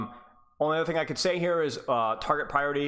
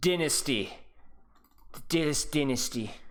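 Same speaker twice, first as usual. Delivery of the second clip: best-attempt put-on New Zealand accent. Reading out a rank name as a joke: best new zealand accent. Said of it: "It's my best New Zealand accent".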